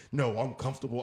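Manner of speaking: put-on deep confident female voice. Retelling what a woman at a bar said: imitating a woman's confident bass voice. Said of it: "the bass and the voice came in when she said it".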